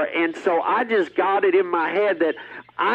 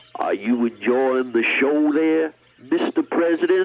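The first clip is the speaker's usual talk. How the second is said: put-on low whispered Southern accent; 4 semitones lower than usual. Retelling what you said while squeezing the trigger, in a southern John Wilkes Booth voice. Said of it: "I even did it in sort of a southern type voice".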